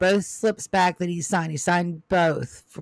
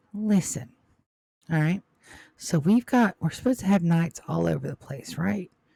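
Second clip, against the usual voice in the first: whispering, much faster. Narrating a scene, a man leans down and tells Namriel to come closer: whispering. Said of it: "he whispers you to come closer".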